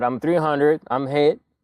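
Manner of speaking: mild, toned-down, acted called-out yell. Retelling being hit and yelling to others: retelling a yell. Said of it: "So I was yelling out".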